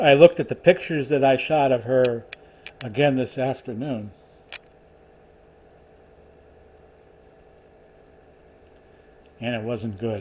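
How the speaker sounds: choked-up voice catching with emotion, swooping pitch. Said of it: "forgive me for getting a little choked up".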